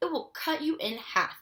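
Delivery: ordinary delivery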